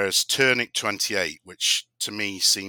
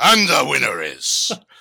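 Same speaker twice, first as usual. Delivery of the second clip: slight gangster accent, raised, higher-pitched voice; 5 semitones higher, 7 dB louder than usual. Trying out voices to announce a winner, mock gangster voice. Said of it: "that's a bit gangster".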